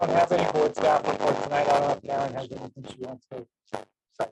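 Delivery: raspy, robotic, machine-like voice. Answering whether there is a board staff report: sounding like a robot. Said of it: "'cause you sound like a robot".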